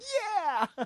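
very high, delighted squeal of joy. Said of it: "he's like".

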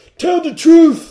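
piercing, shrill, very high, very loud shout. Retelling a podcast host's catchphrase, yelling like Will Smith in Concussion. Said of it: "he yells".

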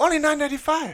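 put-on Chinese accent. Playing Lee in an acted movie scene: put-on Chinese accent. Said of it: "one really quick Chinese accent".

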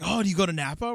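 eager, thrilled tone. Retelling a wine tasting guide's question: imitating excited speech. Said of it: "He was so excited".

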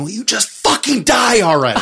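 fed-up, exasperated outburst. Retelling a movie scene of screaming at the screen: imitating Elaine screaming. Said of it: "screaming at the screen".

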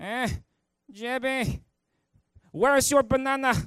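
very loud, very slow, high, booming grandfatherly voice. Retelling how a grandfather greeted a grandson: imitating grandfather's interesting voice. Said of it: "he's got this interesting voice".

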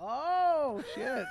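shocked, high-pitched, startled yelp.

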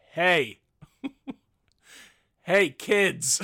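very loud yelling, shouting down. Retelling standing with their dog and yelling at fighting kids, retelling a yell. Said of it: "I just yell".

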